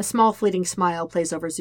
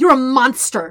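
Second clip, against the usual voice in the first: very loud, high-pitched snarled outburst; 7 semitones higher, 11 dB louder than usual. Katara confronts the agent who just nodded, snarling. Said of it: "Katara snarls".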